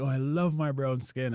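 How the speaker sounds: put-on gushing, thrilled scream of delight. Retelling what a date shouted at the beach: imitating someone screaming. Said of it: "screaming like".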